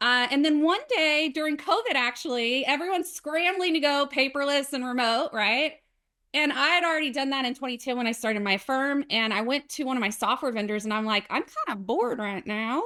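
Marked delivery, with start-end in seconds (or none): 11.3-12.8 put-on Southern drawl accent. Retelling own words to a software vendor: Southern accent. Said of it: "that's my Southern accent coming through".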